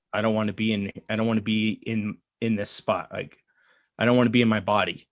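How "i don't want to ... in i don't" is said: usual speaking voice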